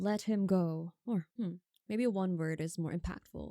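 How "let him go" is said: loud, booming, authoritative, commanding voice. Narrating a scene where he casts a command, in a booming voice. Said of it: "with a booming voice".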